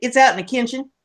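put-on down-home Kentucky accent. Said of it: "I was saying everything just like Granny did".

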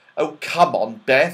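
impatient coaxing voice. One child answers another who asks whether it is all right to go, impatient. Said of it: "said Joe impatiently".

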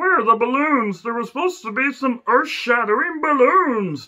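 terrible, high-pitched cartoon alien voice. Breaking off from talk about wrestling shows to do a terrible Marvin the Martian impression. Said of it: "Terrible Marvin the Martian impression".

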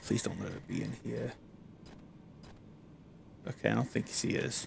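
hushed whisper, barely above the breath, muttered. Game streamer narrating while exploring, talking quietly. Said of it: "I know I'm talking kind of quiet".

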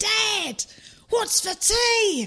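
long, very slow, high, drawn-out calling holler. Retelling a story of a kid calling across a lake: imitating a kid shouting. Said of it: "the kid shouts so loud across the lake".

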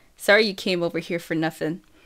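ordinary delivery

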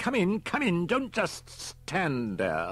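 very high, slow, loud, cross, irritable voice. Narrating a story, the bank manager tells a late arrival to come in, irritable. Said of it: "The scowling bank manager expected the telephone to ring at any moment".

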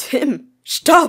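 very loud, sharp, cutting shout. Waffy calls out to Tim to stop, loud and cutting. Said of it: "Waffys Stimme hallte laut und schneidend durch den Raum".

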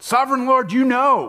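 confident, very high voice. Imagining another way Ezekiel answered God: confident Ezekiel reply. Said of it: "Maybe it was confident".

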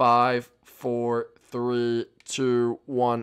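robot-like voice. Counting down from five, in a robotic countdown. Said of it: "I sound like a robot right there".

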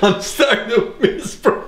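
high-pitched, giggling, laughing while talking.

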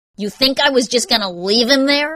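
barked, sharp comeback. Narrating a man answering a woman who accuses him, barking. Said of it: "He barked".

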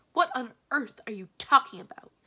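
irritable snapped retort. Aramin, thoroughly miserable, answers mr. ledbetter's suggestion, snapped crossly. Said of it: "Snapped Aramin, who was feeling thoroughly miserable and therefore quite cross".

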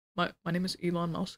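low, bleak, hopeless voice. Attempting an Elon Musk impression after asking how to do one: Elon Musk impression. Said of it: "how the fuck do you even do an Elon Musk impression".

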